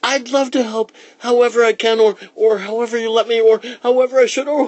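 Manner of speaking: very high, fast, excited tumbling babble. Josie answers Santa's job offer, babbling excitedly. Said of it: "She started babbling".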